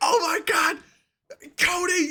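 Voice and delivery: very high, stretched-out, excited squeal, freaking out. Imagining a grown man's reaction in the ring, imitating a fan freaking out. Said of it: "And he'd be freaking".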